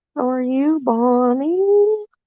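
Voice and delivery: very slow, drawn-out hog-calling cry. Greeting someone like an Arkansas Razorbacks hog call. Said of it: "Like I was calling for the Arkansas Razorbacks pig sue".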